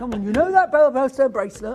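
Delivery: very loud, cross, grouchy voice. Retelling what he said about a bracelet: imitating his grumpy talk. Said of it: "You know what he talks like".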